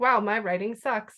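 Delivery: normal talking voice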